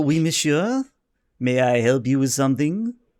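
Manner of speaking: poor, put-on French accent. Game master voicing a waiter answering a customer's call: poor french accent. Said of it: "I get to do a poor French accent".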